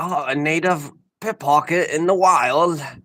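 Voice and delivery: slow, unhurried, put-on Australian accent. Retelling a line from a safari video: imitating someone's aussie accent. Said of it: "he's doing, like, the Aussie accent".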